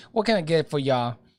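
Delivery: put-on Texan accent. Describing the local accent and imitating it: imitating a texan accent. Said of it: "they got a good Texan accent".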